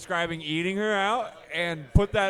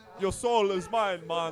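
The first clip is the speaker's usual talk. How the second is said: put-on Jamaican accent. Imitating a Jamaican character the others remember: Graham impression with Jamaican accent. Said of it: "I can't do a Graham impression".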